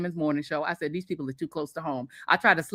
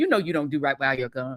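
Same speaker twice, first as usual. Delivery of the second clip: mock nice, gentle tone, lower; 3 semitones lower than usual. Retelling how the dentist scolds about the gums: imitating someone speaking nicely. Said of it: "he's saying it in the nicest way".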